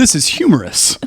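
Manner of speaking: canned, fake amusement, sitcom-viewer style. Joking about how people laugh at sitcoms: mock sitcom-viewer voice. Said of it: "This is how we laugh when we watch sitcoms".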